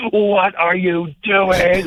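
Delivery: put-on furious scream, very high and very slow. Retelling how his wrestling partner screamed at him on television, retelling a scream. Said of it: "he just screamed at me".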